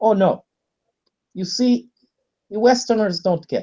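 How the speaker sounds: bad, clumsy put-on Russian accent. Mimicking how Russians argue about the issue, in a bad Russian accent. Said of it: "putting on a bad Russian accent".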